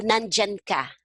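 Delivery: plain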